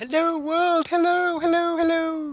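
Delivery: put-on posh British accent pitched very high. A co-host greets everyone on a weekly roundtable episode in a Queen accent impression. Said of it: "That was my Queen accent".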